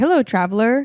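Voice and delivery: put-on fancy, highfalutin old-world storybook fantasy diction. Showing what a highfalutin fantasy game dialect sounds like: highfalutin fantasy dialect. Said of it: "what's highfalutin? Like".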